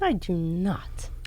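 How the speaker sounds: slow, mock-hushed whispered delivery.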